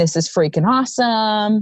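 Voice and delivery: plain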